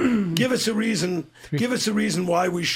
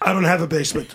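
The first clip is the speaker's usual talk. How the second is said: put-on deadpan, flat, expressionless delivery; 3 dB louder than usual. Retelling the speaker's answer to a man's accusation, retelling a deadpan reply.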